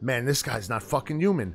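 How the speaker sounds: muttering under breath. Speaker retells a man seeing someone get up after going through a window, retelling a mutter under breath. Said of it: "he just says to himself under his breath".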